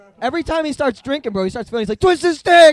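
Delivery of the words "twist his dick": very loud, shrill, all-out screaming. Retelling what a man screams whenever he starts drinking, imitating someone screaming. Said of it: "that's what he's screaming".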